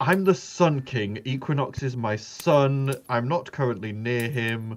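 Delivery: slow, deliberate, regal voice. Voicing the Sun King speaking into a player's head: Sun King character voice. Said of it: "You hear in your head".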